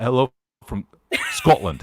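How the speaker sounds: put-on Scottish accent, laid on, sing-song. Greeting someone from Scotland, asked to do the accent: put-on Scottish accent. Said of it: "Should I do my Scottish accent?".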